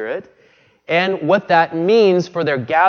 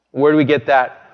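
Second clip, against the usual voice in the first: ordinary talk, nothing marked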